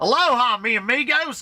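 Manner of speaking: over-the-top, very high, thick Southern drawl. Repeating their current favorite quote: heavy southern american accent. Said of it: "pronounced as southern as possible".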